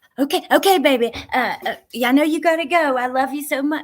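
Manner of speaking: fretful, worked-up voice. Retelling how Aunt Brenda ends a call when time runs out: imitating Aunt Brenda sounding anxious. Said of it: "you can just hear the kinda anxiety in her tone".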